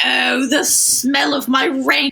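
put-on, high, vaguely British lady advert voice. Describing an ad playing on loop, the speaker voices its line in a vaguely British lady voice. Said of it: "a vaguely British lady in like a".

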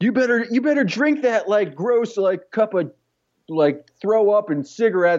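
bossy tone, high pitched. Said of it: "It's just like".

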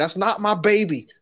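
shrill, very high, loud yell. Joking about a prank on a show, pretending to yell into the phone. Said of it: "yelling to the phone".

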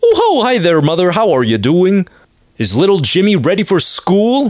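put-on sing-song, high, wholesome old-timey fifties-dad cheer. Acting out a 1950s father greeting the mother: imitating cheery 1950s family talk. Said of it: "People were talking like".

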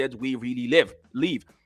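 ordinary delivery

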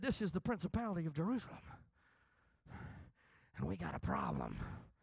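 tiny, nervous little whisper. Retelling a call to hell's hotline, acting out the caller: mock-nervous little voice. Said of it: "the nervous little voice on the other end said".

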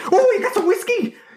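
acted very high, thrilled, gleeful, super excited voice. Describing Django as a soldier, imitating excited Django. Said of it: "super excited about whiskey".

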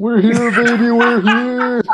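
put-on, very high, all-out screaming cheer. Joining in on a quoted movie scene: imitating Stifler screaming. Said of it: "[name] just starts screaming".

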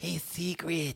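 cartoon mole character voice. Recalling an old cartoon, the speaker shows how a character talked: Morocco Mole voice. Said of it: "He used to talk like this".

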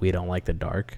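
ordinary talk, nothing marked

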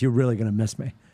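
acted gloating, smug, self-satisfied tone. Retelling what a son said to his father at the car: imitating a smug tone. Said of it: "He turns around so smug".

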